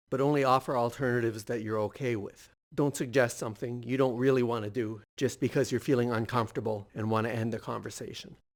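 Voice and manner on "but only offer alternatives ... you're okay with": ordinary delivery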